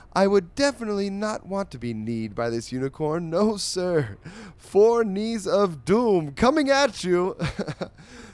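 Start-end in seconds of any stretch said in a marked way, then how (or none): 0.2-7.4 grand, fancy reading voice. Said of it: "I will attempt to read this in a fancy voice".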